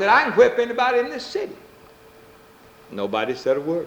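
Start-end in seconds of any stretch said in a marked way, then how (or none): 0.1-1.6 shrill, very high, pitched-up yell. Telling of a man boasting to the bar patrons, retelling a higher shout. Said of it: "shouted a little bit higher than he'd spoken before".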